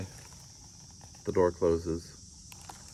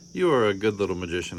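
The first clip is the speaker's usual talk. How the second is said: plain reading voice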